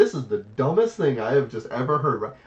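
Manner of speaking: normal talking voice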